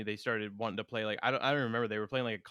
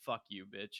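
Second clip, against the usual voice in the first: put-on angry man voice, quieter; 8 dB quieter than usual. Retelling a story of a drunk man in a bar: imitating an angry man. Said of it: "he's pissed off at the guy".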